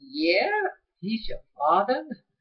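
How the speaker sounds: acted-out, very dubious, doubting, swooping tone. Retelling an interview where a man answers a woman about her dad; very questionable voice. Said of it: "in a very questionable voice".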